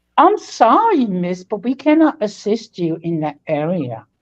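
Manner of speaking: put-on straight-faced, very professional tone. Retelling own reply to a woman being interviewed: imitating own very professional manner. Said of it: "in a very professional manner".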